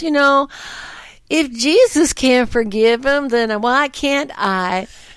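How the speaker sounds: slow, put-on Southern Illinois old lady voice. Retelling what a little old lady said, in a Southern Illinois old-lady accent. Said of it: "I shouldn't have done that accent".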